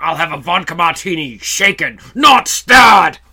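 very angry, loud, slow barked delivery. Doing an impression of Timothy Dalton ordering a drink: Timothy Dalton impression, very angry. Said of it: "my Timothy Dalton impression was always".

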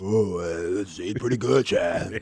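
bad, deep, slow, dragged bass voice. Answering the question in a bad bass-voiced impersonation: bad Anthony Richardson impersonation. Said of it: "my really bad impersonation of Anthony Richardson".

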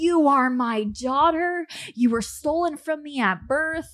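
loud, frantic yelling in a woman's voice. Retelling a childhood visit from a lady at the door: imitating a frantic yelling lady. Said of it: "She was yelling".

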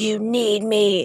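electronically distorted, disguised voice-changer voice. Joking about a late-night call to a player: imitating Scott Layden through a voice changer. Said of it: "uses one of those voice changers".

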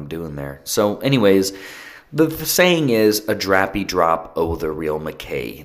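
ordinary delivery

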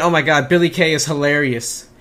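ordinary talk, nothing marked

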